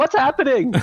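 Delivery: put-on very high, loud shouted call. Retelling watching horror movies from another room: imitating a shout from another room. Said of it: "shouting into the other room".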